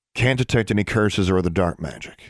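ordinary delivery, nothing marked

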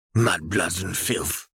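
slow, muttered, sneering tone. Reading a father's line in a disagreement with his son, muttering with a sneer. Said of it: "his father muttered with a sneer".

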